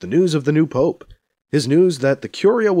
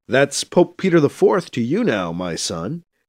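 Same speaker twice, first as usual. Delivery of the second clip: put-on solemn tone, stifling a laugh. [name] answers an awaited call from Wentworth, mock-solemn, holding back a laugh. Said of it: "[name] says in mock solemnity, trying hard not to laugh".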